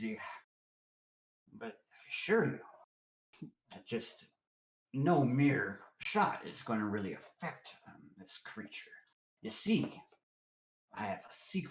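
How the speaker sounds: voice dropped low, hushed. Voicing a talkative old drinker telling a story, lowered voice. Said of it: "lean forward and lowered his voice".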